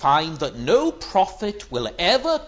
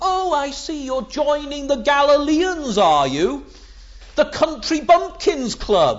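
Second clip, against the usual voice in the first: scornful, mocking, sneering, pitched up; 6 semitones higher than usual. Speaker acts out the Pharisees sneering at Nicodemus, mock sneering. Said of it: "these Pharisees sneer at Nicodemus".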